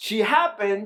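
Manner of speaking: emphasis on happened, slow and drawn out. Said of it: "I wanna emphasize this word".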